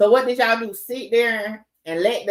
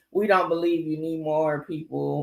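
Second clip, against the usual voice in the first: deep, low put-on voice; 5 semitones lower, 3 dB quieter than usual. Speaker performs a quoted line in a Sean Carter voice. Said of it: "in my Sean Carter voice".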